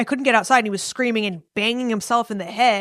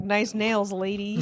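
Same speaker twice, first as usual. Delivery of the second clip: casual, flirty street come-on tone; 2 semitones lower, 7 dB quieter than usual. Mocking the other speaker hitting on ladies at the post office: imitating Tim. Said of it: "Tim's all up in there being like".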